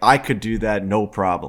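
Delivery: put-on breezy, self-assured, confident tone. Retelling a claim made in the car: imitating Dave's confident boast. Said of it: "And he's like".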